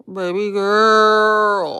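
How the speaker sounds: loud put-on voice, stretched girl. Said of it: "in my [name] voice".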